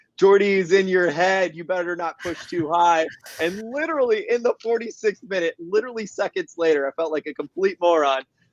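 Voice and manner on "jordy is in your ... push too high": mild, heated, excited, lightly yelled. Retelling what they screamed at a player during the match: imitating own screaming. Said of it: "I start screaming".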